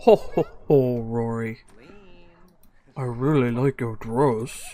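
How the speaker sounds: very slow, corny, bad holiday-man voice, drawn-out ho-hos. Voicing a game character flirting with Rory: awful Santa voice. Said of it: "How do you like my Santa voice?".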